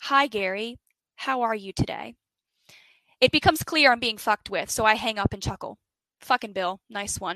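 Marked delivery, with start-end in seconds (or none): 0.0-2.2 robotic, computerised machine-like sat-nav speech. Retelling a prank phone call that woke you, robotic TomTom GPS voice. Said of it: "He repeats".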